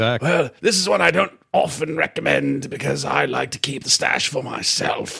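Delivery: put-on, raspy elderly voice with English accent. Playing the monk recommending a tea: raspy old Englishman voice. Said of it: "baked into that rasp".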